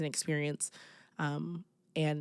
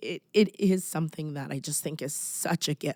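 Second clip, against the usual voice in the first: emotional, choked-up voice welling with feeling; 3 dB louder than usual. Describing what helping others gives back, getting emotional. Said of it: "now I am getting emotional".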